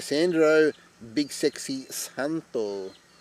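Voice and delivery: put-on Spanish accent, drawn out, very slow. A cricket commentator says a batsman's name, in a Spanish accent. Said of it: "I don't know why I'm saying it with a Spanish accent".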